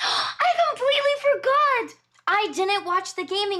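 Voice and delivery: very high, loud, sudden yelled outburst. Suddenly remembering an awards show not yet watched on stream: yelling. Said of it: "I'm sorry for yelling".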